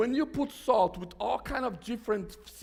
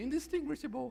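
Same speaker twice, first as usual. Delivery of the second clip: woman's voice sounding recorded, through a speaker; 4 semitones higher, 6 dB quieter than usual. Retelling how the phone app said the word: imitating a lady's voice. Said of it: "It was in a lady's voice".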